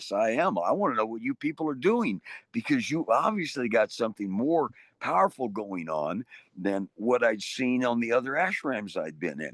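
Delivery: ordinary delivery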